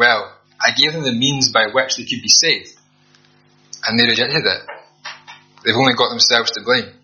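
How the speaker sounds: ordinary talk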